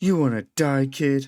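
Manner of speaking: loud shout. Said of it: "The dragonborn shouts".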